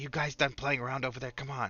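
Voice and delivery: loud whisper. Calling over to the other players, whisper-yelling. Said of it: "I kind of whisper yell to you guys".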